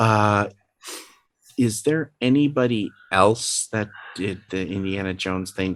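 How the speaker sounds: very quiet, hushed delivery. Playing a character who asks another character a question: speaking very quietly. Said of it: "very quietly says".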